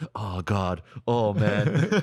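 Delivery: put-on very slow voice heavy with shame. Retelling how Kev reacted on being recognized: imitating Kev's ashamed voice. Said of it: "with so much shame in his voice".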